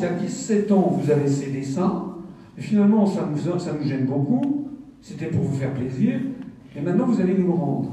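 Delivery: ordinary talk, nothing marked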